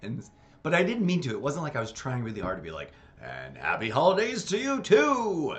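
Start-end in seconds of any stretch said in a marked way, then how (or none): 3.2-5.6 very slow, drawn-out, raised broadcast-announcer delivery. Recreating how their own reply came out: announcer voice. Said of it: "in a slightly like announcery voice".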